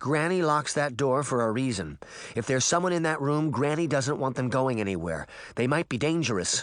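ordinary delivery

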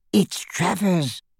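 hushed, soft, hissing, sibilant delivery. A goblin clinging to a boy's neck names the approaching wizard into his ear; hissed. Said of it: "hissed the goblin into Harry's ear".

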